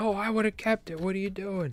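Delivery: play-acted, very high, angry berating voice. Retelling bystanders cursing at a kid who let a fish go, mock-angry cursing. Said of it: "They're like cursing at this kid".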